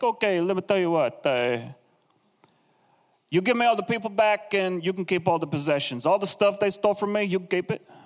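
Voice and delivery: terrible, quick, put-on Italian mob-boss accent. Retelling a man's offer to Abram, the speaker uses a terrible Italian mob-boss accent. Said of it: "my Italian accent is terrible".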